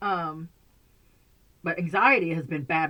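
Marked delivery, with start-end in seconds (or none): 1.6-2.9 anxiety stressed, pushed a little louder. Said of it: "My anxiety has been bad".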